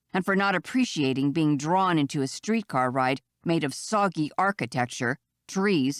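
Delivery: ordinary delivery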